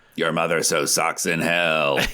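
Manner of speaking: put-on demonic, possessed-sounding voice. Describing a demon voice heard on tapes, the speaker quotes it, demon voice. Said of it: "this like demon voice".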